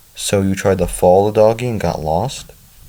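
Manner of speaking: usual speaking voice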